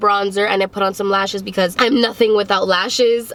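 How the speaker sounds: ordinary talk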